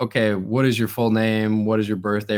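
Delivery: normal talking voice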